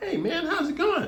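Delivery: pitched way up, light. Showing how he greets someone, voice raised much higher. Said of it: "I raise my voice a few octaves".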